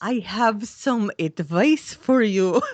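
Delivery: put-on over-the-top supervillain accent. Recapping a TV scene where Gideon offers advice, in an over-the-top Boris Badenov accent. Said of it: "it was German".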